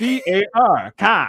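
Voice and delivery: put-on very slow, drawn-out Boston accent. Mocking how kids with a Boston accent spell a word: imitating a Boston accent. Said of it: "the Boston accent".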